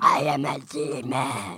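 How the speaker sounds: demon voice pitched very deep. Taking turns doing impressions of a demon, in a demon voice. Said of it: "Do your best impression of a demon".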